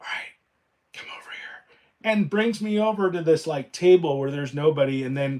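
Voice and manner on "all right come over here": hushed, secretive whisper, barely voiced. Retelling a bank worker pulling them aside: imitating a whisper. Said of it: "she starts whispering".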